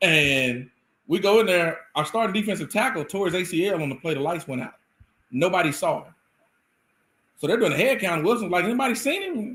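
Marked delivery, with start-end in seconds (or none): 8.7-9.6 calling out in a very high-pitched voice. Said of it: "he has a real high-pitched voice".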